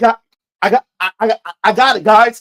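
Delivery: hard stutter on got and I, pushed out loud. Retelling what he said with the monster coming his way, imitating a stutter. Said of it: "he's like he stutters a lot".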